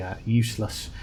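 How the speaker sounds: ordinary delivery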